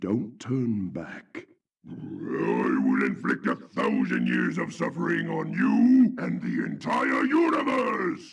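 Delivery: very low, deep-throated villain voice, wide pitch swings. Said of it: "him giving a deep voice".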